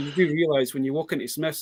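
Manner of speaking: ordinary delivery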